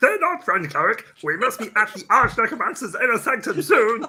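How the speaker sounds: put-on puppet monster character voice. Redoing a line in a recorded dungeon scene, Cookie Monster voice. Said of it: "doing the Cookie Monster voice".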